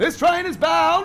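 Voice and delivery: shrill, booming, very loud, high-pitched yell. Imitating the guy with the whistle at the station, yelled out. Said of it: "when they yell it out. ... Sorry if I yelled".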